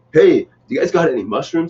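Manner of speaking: casual hip voice, audibly straining to sound cool. Mocking someone who says shrooms, imitating a guy trying to sound hip. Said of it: "You sound like the guy that's trying to speak hip".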